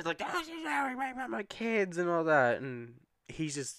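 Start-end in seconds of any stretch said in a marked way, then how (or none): 0.2-2.6 shrill, very high, loud screaming rant. Describing a man screaming at his interviewer: retelling a scream. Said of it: "He's screaming".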